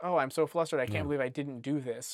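ordinary talk, nothing marked

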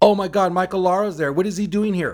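play-acted loud, high shriek. Retelling how someone at a play party screamed across the room: imitating someone screaming. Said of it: "someone screams out".

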